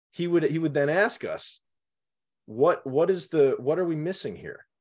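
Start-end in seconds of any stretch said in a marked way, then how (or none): 2.4-4.5 very calm, patient, serenely even tone. Retelling Dad asking about misspelled words: imitating the calmest voice. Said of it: "in the calmest voice".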